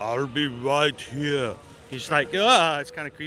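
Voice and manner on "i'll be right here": low, slow, flat, machine-like robotic monotone. Speaker imagines a film character saying the line, slow monotone Terminator voice. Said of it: "the Terminator".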